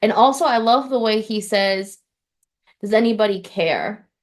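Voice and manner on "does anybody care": mock defeated, deflated tone. Describing the way he delivers a line, imitating a defeated voice. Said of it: "it's very defeated".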